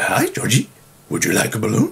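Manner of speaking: gentle, swooping, up-and-down sing-song voice. Explaining how he played Pennywise talking to Georgie: soft Pennywise voice. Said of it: "he's like really soft".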